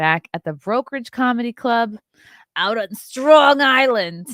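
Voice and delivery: loud, high Pittsburgh accent slipping in. Comedian announcing upcoming tour dates, slipping into a Pittsburgh accent. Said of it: "I said that with a Pittsburgh accent".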